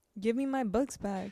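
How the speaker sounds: ordinary talk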